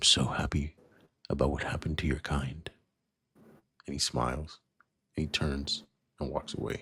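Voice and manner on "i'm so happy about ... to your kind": low muttering under the breath. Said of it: "he'll mutter under his".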